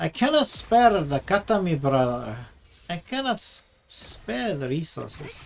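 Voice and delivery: poorly done attempt at a Scottish accent. Speaker complaining that starting again is too expensive, in a bad scottish accent. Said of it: "I think that was supposed to be a Scottish accent".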